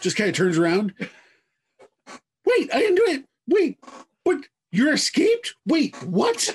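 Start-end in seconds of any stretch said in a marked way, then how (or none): 2.4-6.5 frantic panic, higher. Voicing a character who hears the agent arrive: freaking out. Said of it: "just freaking out".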